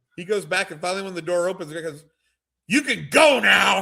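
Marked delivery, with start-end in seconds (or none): 2.7-3.8 put-on very slow, loud, gruff, drawn-out yell. Retelling a stranger leaving the train bathroom: imitating someone yelling. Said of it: "He's, like, yelling at the whole train".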